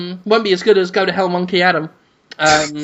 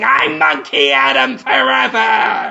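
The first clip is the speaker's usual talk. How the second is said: put-on, slow speech through fake laughter; 4 semitones higher than usual. Acting out a character's line in a made-up film scene: fake laughing while talking. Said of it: "while laughing and going".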